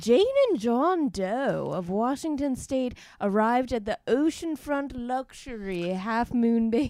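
put-on posh, moneyed rich-person accent. Reading a news story about a couple at a luxury hotel: put-on rich accent. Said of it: "What is this accent?".

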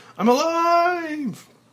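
very high, joyful, lively, drawn-out shout. Reading a script aloud, a man realizes he survived: shouting with joy. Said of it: "finally shouting with joy".

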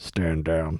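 soft, radio-chatter style. Acting out a leader speaking into a little microphone: mock Secret Service radio order. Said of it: "Secret Service style".

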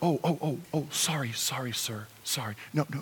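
gentle, low-pitched tones. Speaker acting out a slave's demeanor toward a master, gentle, low tones. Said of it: "I'm very gentle, low tones".

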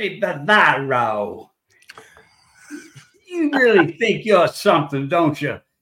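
loud, thick, heavy Southern drawl, words stretched out. Telling a dinner-line story, the speaker quotes Lamar taunting rookie Bavaro, in a heavy Southern accent. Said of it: "he's got this real heavy Southern accent".

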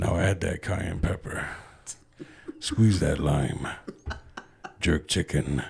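put-on low, sultry, seductive voice. Wanting to narrate a cooking bit, the speaker does a sexy voice. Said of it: "I want to do the sexy voice for it".

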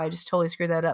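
ordinary delivery

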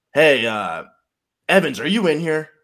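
called out loudly at a high pitch. Retelling a coach calling into the room: imitating Coach Wallace. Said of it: "he said it like that".

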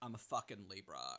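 very hushed, barely audible, heavy creaky vocal fry. Explaining how anyone can do it: Adore impression with vocal fry. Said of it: "You just do vocal fry and go".

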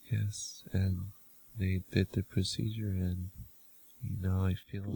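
slow, quiet monotone male voice. Imitating a man whose face did not move as he talked, in a flat robotic monotone. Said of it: "He was monotone".

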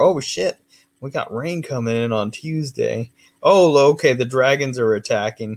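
normal talking voice

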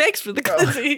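rattled off fast, high-pitched and obnoxious. Imitating the NPC TikTok bit: obnoxious NPC TikTok voice. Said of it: "the most obnoxious".

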